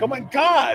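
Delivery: put-on screaming, shrieking outburst. Retelling watching the shot in the living room: imitating screaming. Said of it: "just screaming, like".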